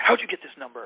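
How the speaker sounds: gruff, barking, almost mean voice. Retelling a phone call, imitating the person answering: gruff and mean. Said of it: "really gruff and almost mean".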